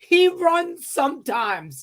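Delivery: acted out, very high pitched shouted yell. Retelling how his partner yelled back at him, imitating someone yelling back. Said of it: "she yelled back at me".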